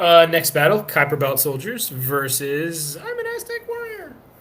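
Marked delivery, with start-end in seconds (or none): 3.0-4.2 very high voice, jumped up an octave. Announcing the next battle contestant, in a voice raised an octave. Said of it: "He has gone up an octave".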